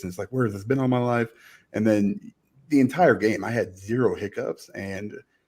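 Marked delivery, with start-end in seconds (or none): none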